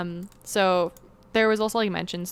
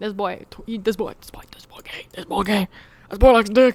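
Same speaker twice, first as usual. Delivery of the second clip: bad put-on Southern detective voice, louder; 8 dB louder than usual. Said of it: "That's my shitty Benoit Blanc impression".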